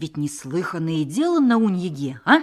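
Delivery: ordinary delivery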